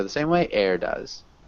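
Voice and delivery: pitch drops sharply on does. Teaching intonation at the end of a sentence: falling intonation on does. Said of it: "the intonation is really dropping".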